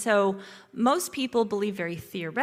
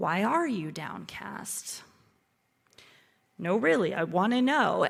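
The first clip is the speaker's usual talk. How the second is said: gentle, kind, caring, compassionate tone. Rereading a question as compassionate rather than accusing, in a gentle, compassionate tone. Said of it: "I obediently switched my tone ... it was actually a very compassionate question".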